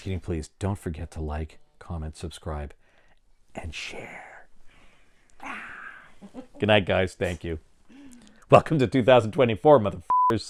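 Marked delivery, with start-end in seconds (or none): 0.0-4.5 sexy, seductive voice, much lower and quieter. Signing off a podcast episode to listeners, in a sexy voice. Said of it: "sexy voice".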